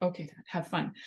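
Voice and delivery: plain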